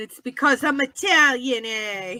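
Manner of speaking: New York-accented speech. After guessing right, the speaker jokes about being Italian in a New York accent. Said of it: "just sounded like a New Yorker for a second".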